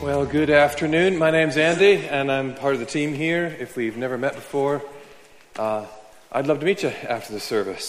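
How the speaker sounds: winded, very loud. Andy greeting the congregation just after running down the stairs, out of breath. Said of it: "I'm out of breath because I just ran down the stairs".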